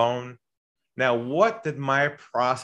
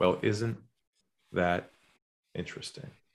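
calm, lowered, whispered, breathy near-undertone; 5 semitones lower, 7 dB quieter than usual. Recounting what they said to him about a big company, retelling in a lowered voice. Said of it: "I lowered my voice".

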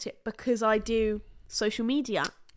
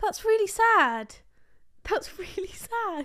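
words broken by laughter, very high and slow; 10 semitones higher than usual. Reacting to news of a fatal car crash, laughing while talking. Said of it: "Why are you laughing?".

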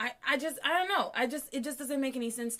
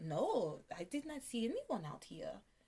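put-on French accent laid on; 8 dB quieter than usual. Retelling a story, voicing Jean-Luc in a put-on French accent. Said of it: "That's my French. You like my French accent?".

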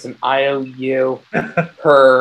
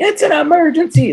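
mock piercing, very high, shrill scream; 4 dB louder than usual. Retelling banging on a door at 11 at night, reenacting own scream. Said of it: "I'm screaming".

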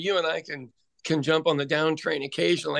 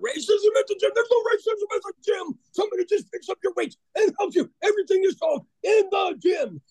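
crazed, insane gym bro voice. Retelling a video of two gym guys talking about racism: imitating an insane gym guy.

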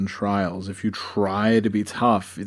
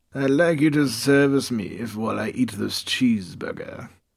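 bad, unconvincing fake British accent. Speaker acts out a crude request, in a bad British accent. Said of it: "Apparently the mess has a bad British accent".

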